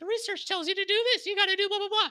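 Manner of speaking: high, quick, squeaky voice. Speaker voicing a junior analyst lecturing a site owner, Mickey Mouse voice. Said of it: "I'm just going to keep on using this Mickey Mouse voice".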